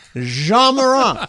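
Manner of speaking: put-on French accent. Imitating a broadcaster who says the name with a French accent: imitating a French-accented pronunciation. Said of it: "adopted a French accent to, uh, describe Ja Morant".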